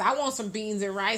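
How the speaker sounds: ordinary talk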